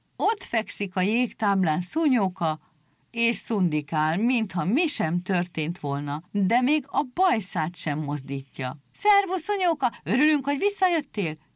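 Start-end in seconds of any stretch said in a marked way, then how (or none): 8.9-11.4 excited crowd shouting, very high-pitched and fast. Seals greet a seal who has come back on the ice floe: shouting over each other. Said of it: "Kiabáltak a fókák egymás szavába vágva".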